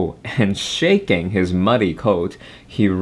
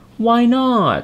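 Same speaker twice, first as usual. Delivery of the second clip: startled, surprised, very high-pitched voice; 13 semitones higher, 3 dB louder than usual. Little Tiger answers the peacock's refusal to play, surprised. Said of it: "Asked Little Tiger in surprise".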